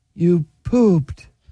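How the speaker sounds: downcast, mournful, sorrowful delivery. Showing different emotional readings of one line, sad.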